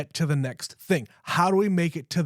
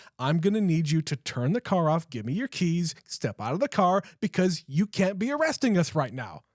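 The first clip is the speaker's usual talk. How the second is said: mock cool, composed, very calm put-on voice. Retelling what she says when she goes up to the cop, mock very calm voice. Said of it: "in a very calm voice".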